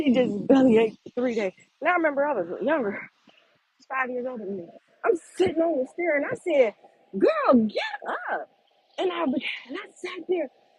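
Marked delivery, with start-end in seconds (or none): 7.2-8.5 shrill, very high-pitched yell. Retelling telling an older sister in bed to get up: retelling own yell up the stairs. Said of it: "I just kept yelling up the stairs".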